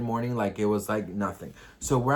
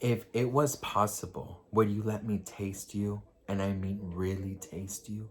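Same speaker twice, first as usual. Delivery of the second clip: soft half-whisper, very close to the ear; 3 semitones lower, 6 dB quieter than usual. Retelling what a man half-whispered to the speaker, half-whispering. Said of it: "he whispers to me".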